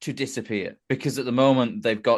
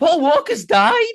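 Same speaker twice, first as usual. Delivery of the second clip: high, loud, fake shocked disbelief. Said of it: "He's being sarcastic".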